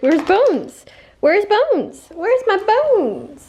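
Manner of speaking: sing-song, high-pitched dog voice. Voicing the dog asking where Bones is: speaking as the dog. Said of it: "Baby says".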